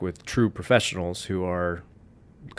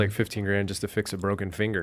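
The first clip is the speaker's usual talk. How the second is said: plain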